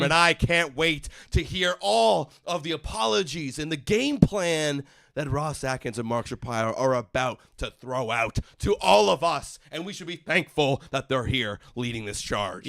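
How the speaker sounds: ordinary talk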